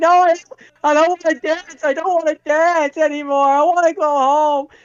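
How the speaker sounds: very high, sobbing little puppet voice. Retelling a movie scene, imitating Pinocchio crying. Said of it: "as he's crying, going like".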